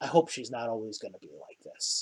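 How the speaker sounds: very low, very quiet, hushed whisper. Narrator voicing a man who looks back at the players, whispering. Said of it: "he kind of whispers".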